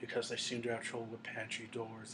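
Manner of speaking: put-on cold, emotionless, very hushed, flat monotone. Retelling a line from a film, imitating a cold, emotionless delivery. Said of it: "he spoke coldly and without emotion".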